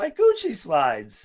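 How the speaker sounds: big male voice turned suddenly high and squeaky. Retelling his big buddy's reaction at the boat ramp, imitating buddy's high voice. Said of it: "His voice got all high".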